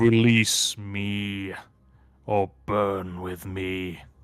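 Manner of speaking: rumbling broken-English voice, "me" drawn out. Narrating a scene, voicing a figure who speaks in broken English, very low rumbling voice. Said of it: "he says in a very low, rumbling voice".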